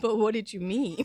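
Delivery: snarky, snide tone, rising like a question. Acting out a reaction to a wrapper message: snarky questioning tone. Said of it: "'cause it's a little bit snarky".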